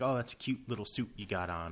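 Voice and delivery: ordinary talk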